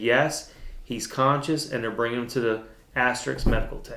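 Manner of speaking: ordinary talk, nothing marked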